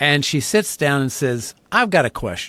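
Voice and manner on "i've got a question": challenging, chip-on-shoulder tone with attitude. Retelling a newcomer's first words in a Bible class: imitating someone with attitude. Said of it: "kind of with an attitude".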